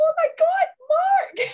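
put-on total freak-out, very high, very slow. Retelling meeting someone on the stairs: imitating freaking out. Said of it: "totally freaking out".

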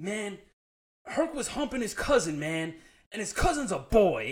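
mock worked-up, exasperated venting, high and loud. Retelling a friend complaining about his dog Hercules: imitating a frustrated friend. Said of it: "I see how frustrated he is".

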